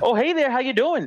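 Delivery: put-on very high-pitched Minnesota accent. Describing Midwestern northern accents, the speaker demonstrates a Minnesota Fargo accent. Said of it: "like that accent".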